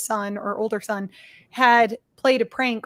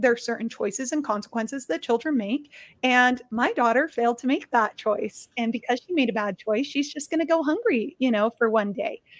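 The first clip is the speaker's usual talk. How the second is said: plain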